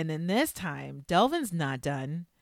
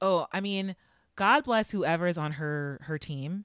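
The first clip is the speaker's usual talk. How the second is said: normal talking voice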